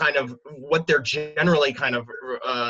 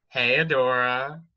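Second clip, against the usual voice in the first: put-on cartoon cat voice. Cast member answers a fan request for their best Catra impression. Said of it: "do their best impression of Catra saying".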